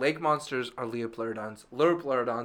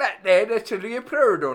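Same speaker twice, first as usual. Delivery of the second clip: very loud, weird put-on British accent, pitched up; 9 semitones higher, 9 dB louder than usual. Retelling what a dude said about a lake monster, in a put-on British accent. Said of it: "That weird British guy".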